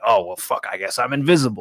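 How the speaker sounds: put-on, fed-up, annoyed, put-out grumble. Imagining a person annoyed that nobody answered: imitating annoyed Charlie Shore. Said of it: "He's like".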